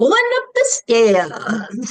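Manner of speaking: put-on very weird, high, swooping child's voice. Retelling a ghost voice caught on camera: imitating a really weird kid voice. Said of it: "in a really weird voice".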